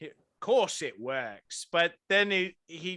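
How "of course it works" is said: put-on half-hearted Australian accent that drifts and slips. Retelling how James Coburn sounds in The Great Escape: imitating James Coburn's wavering Australian accent. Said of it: "But he'll go".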